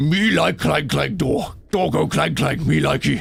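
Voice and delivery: rough neanderthal-like voice. Joking about a clanging door, the speaker uses a Neanderthal-sounding voice. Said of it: "like a Neanderthal sort of sounding voice".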